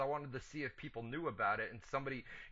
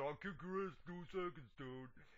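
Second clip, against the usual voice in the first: Florida accent, quieter; 4 semitones higher, 6 dB quieter than usual. Asked for the Florida version, repeating the line in a Florida accent. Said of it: "Give me the Florida version".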